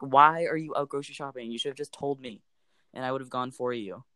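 ordinary talk

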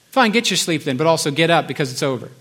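ordinary delivery

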